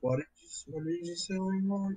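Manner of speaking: drowsy voice. Just woken, asking langmore what he said: half asleep. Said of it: "I was still half asleep".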